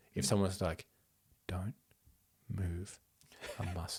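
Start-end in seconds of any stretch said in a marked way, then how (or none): 1.4-4.0 steady, calm, low, very hushed voice. Speaker demonstrating how someone might say it, calm, low voice. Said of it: "say this kind of calmly in a low voice".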